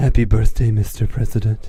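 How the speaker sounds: put-on Russian accent, low, sultry, cooing. Retelling a Russian-accented woman's birthday greeting, Eastern European Marilyn Monroe voice. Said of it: "I was kind of trying to make it sound like a combination of Eastern European and Marilyn Monroe".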